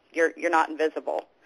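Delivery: dry, somewhat sarcastic, play-acted tone. Retelling what was said aloud to an unseen voice: retelling own sarcastic remark. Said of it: "kinda sarcastically say".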